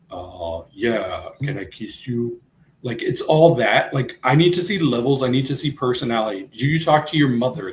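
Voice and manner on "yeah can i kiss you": imitated low, too-cool monotone voice. Mocking how Corbin always talks: imitating Corbin's low too-cool tone. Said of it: "everything's down in this tone".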